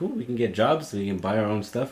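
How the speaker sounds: ordinary talk, nothing marked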